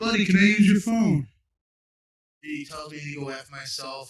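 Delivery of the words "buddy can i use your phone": very loud, high yell carrying across distance. Telling how they yelled out to a guy getting home, retelling a yell. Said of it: "I yelled out to him".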